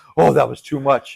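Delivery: ordinary talk, nothing marked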